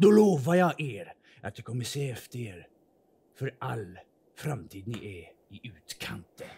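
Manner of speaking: put-on guard voice with underbite. Narrator voicing a village gate guard questioning strangers: underbite gate guard voice. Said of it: "Och det är en väldigt underbeten man som är en av vaktpostpersonerna som sitter här ute och vaktar allt som är inifrån".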